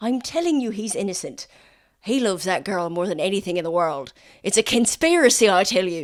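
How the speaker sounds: put-on insistent, pleading Irish accent. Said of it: "So much Irish in this episode".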